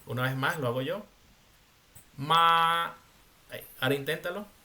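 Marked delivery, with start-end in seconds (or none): 2.2-2.9 ma held on one even, level first tone. A teacher models pinyin tone one for a student: level pitch on 'ma'. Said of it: "M A con tono uno suena ma".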